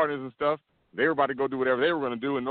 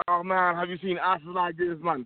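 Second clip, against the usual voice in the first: put-on Jamaican-accented voice; 5 semitones higher than usual. Telling of a taxi ride on South Beach, quoting the Jamaican driver in a Jamaican accent. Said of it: "sorry for my Jamaican accent".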